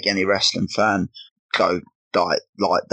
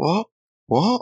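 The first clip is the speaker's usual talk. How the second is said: very high, gobsmacked, stunned disbelief; 11 semitones higher than usual. Recalling watching a shocking moment on PlayStation, reenacting own reaction: reenacting a quiet stunned 'what?'. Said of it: "I'm not even loud. Just, like, quite".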